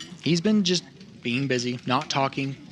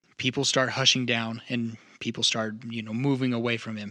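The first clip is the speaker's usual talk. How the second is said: ordinary delivery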